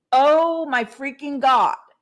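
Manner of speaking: loud, high, fervent, heartfelt passionate outburst. Speaker showing how they always say a phrase, said with passion. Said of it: "I say it with passion".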